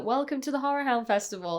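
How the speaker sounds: terrible put-on fake Louisiana accent. Recalling an actress's welcome speech at a horror festival, bad fake Louisiana accent. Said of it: "the accent was so bad".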